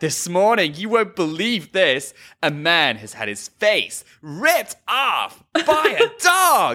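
put-on slow American accent creeping into the voice. Retelling how a woman told a sad story: American accent. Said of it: "Your American accent is also creeping up in there".

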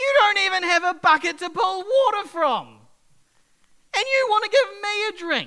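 play-acted, very loud, high, laughing, swooping tone. Retelling the woman's reply to Jesus in a Bible story, with a put-on laugh in her voice. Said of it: "you can hear the laugh in her voice".

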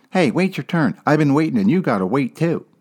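squeaky mocking voice, words rattled off quickly.

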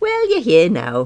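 sugary, sweet tone. Muriel replies to the narrator, who arrived late and panting: sweetly, with a smile. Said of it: "Muriel smiled sweetly".

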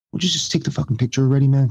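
voiced stage half-whisper. Retelling what Ed O'Neill half-whispered while the other guy kept talking, imitating Ed O'Neill half-whispering. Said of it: "Ed O'Neill just like whispers".

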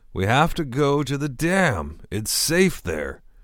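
put-on sloppy, high-pitched, swooping drunken yell. A drunk passenger yells from the back seat. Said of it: "Fountain drunkenly yelled".

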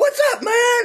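acted, very high, wired, hyper excited voice. Retelling busting into a recording room: imitating own hyper greeting. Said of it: "I'm already hyper. I come busting in there".

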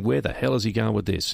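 ordinary delivery

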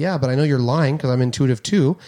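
ordinary delivery

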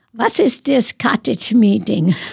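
put-on German accent. Retelling how Tommy used to mimic the speaker's mother, imitating mother's German accent. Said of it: "He said she had an accent".

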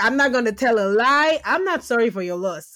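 ordinary talk

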